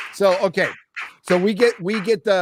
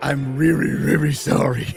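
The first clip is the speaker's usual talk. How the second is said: cartoon character voice; 3 semitones lower than usual. Showing how a man says his apology, Scooby-Doo impression. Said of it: "Why is he doing an impression of Scooby Doo?".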